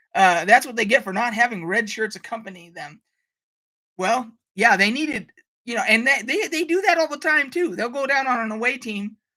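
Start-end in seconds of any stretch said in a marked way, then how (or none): none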